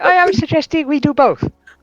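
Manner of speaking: put-on mixed European accent, pitched very high. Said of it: "it is a European accent".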